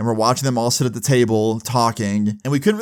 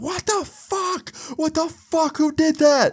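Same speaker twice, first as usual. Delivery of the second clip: very high, long, drawn-out shrieking screams. Retelling how a wife reacted after the porta potty tipped: imitating a woman screaming. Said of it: "the dude's wife start screaming".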